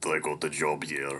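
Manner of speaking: put-on dry delivery with a Russian accent. Narrator reading Alexander's reply to the boy, Alexander in a Russian accent. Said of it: "I think the Russian accent suits him".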